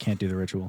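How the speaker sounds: voice suddenly sobers up, joking gone. Voicing K, who refuses to do the ritual: sobered-up voice. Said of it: "his voice, like, kinda sobers up".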